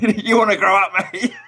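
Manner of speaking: put-on play-acted, shrill, very high drunken shout. Retelling a drunken row in Tinkerbell costume, imitating a drunk woman yelling. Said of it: "yelling at Peter Pan".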